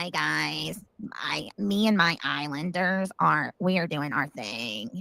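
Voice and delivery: low, soft, creaky, fried-out vocal fry. Describing a woman who smokes while streaming, imitate her vocal fry. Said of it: "she's got some vocal fry".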